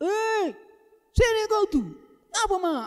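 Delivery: high harsh call.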